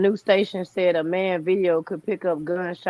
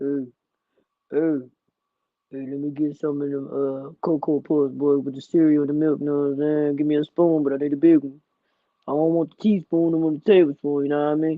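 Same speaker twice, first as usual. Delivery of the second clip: fake deep voice, pitched low; 4 semitones lower than usual. Speaker switching phones tries out talking with a deep voice: put-on deep voice. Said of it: "would you listen to my show if I talk like that?".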